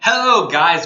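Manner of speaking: loud, shouted yelling. Greeting viewers at the start of a video: yelling. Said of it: "Don't mean to yell at you".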